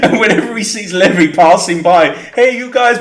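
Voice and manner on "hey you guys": put-on Italian accent, pitched up, called out. Describing a guy in the basement who calls to someone passing, in an italian accent. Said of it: "but in an Italian accent".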